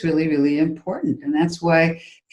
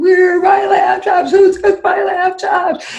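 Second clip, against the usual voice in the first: loud, very high-pitched, shrieking scream; 14 semitones higher, 7 dB louder than usual. Recounting coming home to find the lamb chops gone, retelling own screaming. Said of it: "And so I started screaming".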